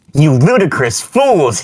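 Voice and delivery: furious, loud, high angry shout. Reading a fan story aloud, a character's line: shouting angrily. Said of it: "He kept shouting at us angrily".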